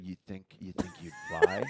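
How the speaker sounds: creepy, breathed-out voice. Retelling a movie scene, quoting Henry: creepy Henry voice. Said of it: "he creepily".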